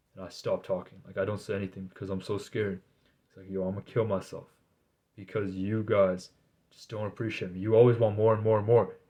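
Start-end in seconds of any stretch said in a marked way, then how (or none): none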